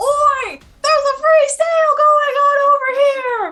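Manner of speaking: loud amplified shout. A character amplifying her voice to pull in a crowd: loud call to a crowd. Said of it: "amplify your voice loud enough".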